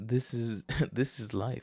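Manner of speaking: put-on speech breaking into slow laughter. Recalling sitting in the car: retelling laughing while talking. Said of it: "sat there in the car laughing like".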